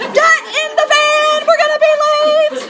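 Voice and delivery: high, loud yelling.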